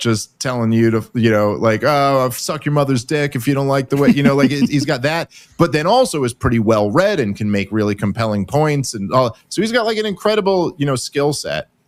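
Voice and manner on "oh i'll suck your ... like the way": put-on sarcastic gamer trash-talk voice. Describing a commentator's style, imitating Fuentes's sarcastic gamer trash talk. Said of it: "sarcastic, I'm on an Xbox vi-, headset".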